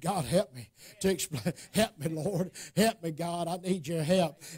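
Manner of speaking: muttering under breath. Showing what one says under the breath while preaching: imitating muttering under breath. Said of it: "under my breath".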